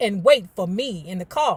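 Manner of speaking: ordinary delivery, nothing marked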